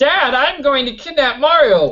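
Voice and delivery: high-pitched voice. Answering a viewer's request: Bowser Junior voice. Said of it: "do the Bowser Junior voice".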